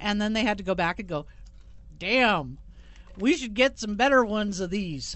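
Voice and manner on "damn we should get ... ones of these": put-on small-town North Carolina accent. Voicing Goose Creek police after a taser use, in a North Carolina accent. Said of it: "That's my North Carolina accent".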